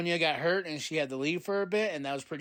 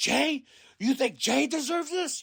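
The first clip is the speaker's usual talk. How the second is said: put-on high, furious scream; 9 semitones higher, 4 dB louder than usual. Describing a WWE segment, the speaker acts out Drew yelling at Seth Rollins: imitating Drew screaming. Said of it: "he's screaming at him like".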